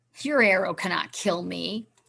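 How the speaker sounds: snarling, snarled monster creature voice. Narrator reads the bear walker taunting the boy with the bow, snarling monster voice. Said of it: "it snarled up at him".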